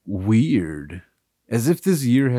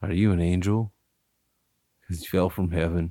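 creepy voice, pitched lower; 3 semitones lower, 5 dB quieter than usual. Acting out a pickup line in a comedy bit, in a creepy voice. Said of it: "Like my voice is pretty creepy".

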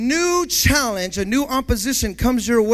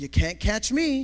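slow, drawn-out cartoon rabbit voice; 6 dB quieter than usual. Retelling a cartoon chase scene: Bugs Bunny voice. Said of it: "Bugs Bunny would go".

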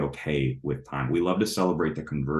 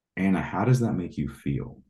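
acted, most gentle, heartfelt, sincere tone. Retelling how Kylie asked Anna a question, imitating Kylie's gentle tone. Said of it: "literally with the most gentle tone".

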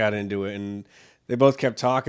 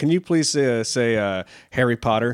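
normal talking voice

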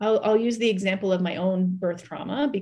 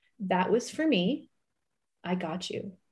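imitated calm, even-toned voice; 5 dB quieter than usual. Retelling the anesthesiologist's words during the speaker's birth, quoting someone speaking calmly. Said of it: "she said very calmly".

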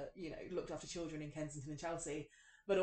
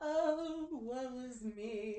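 fake woe-is-me lament; 8 semitones higher than usual. Mocking how talking about the past starts to sound: mock self-pitying lament. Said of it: "it starts to sound like I'm just like".

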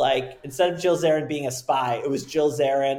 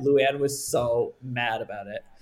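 normal talking voice

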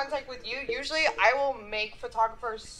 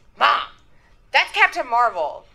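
put-on little kid voice, louder; 9 dB louder than usual. Retelling a little kid correcting his mom: imitating a little kid correcting mom. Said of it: "one little kid who was like".

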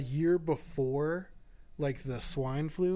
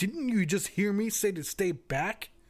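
mock combative, hostile, aggressive, high confrontational tone; 5 semitones higher than usual. Retelling what a man said to people walking toward him: mock-aggressive. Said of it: "very aggressive".

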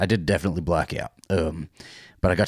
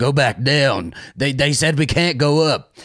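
put-on screaming, higher and louder; 7 semitones higher, 5 dB louder than usual. Retelling someone filming at the top of the stairs: imitating Alistair screaming. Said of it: "he's screaming".

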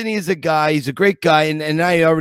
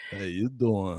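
very low, hushed, soft and inviting tone; 8 semitones lower, 11 dB quieter than usual. Comparing famous greetings, the speaker does Joey Tribbiani's inviting 'how you doing'. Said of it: "Joey's is very inviting".

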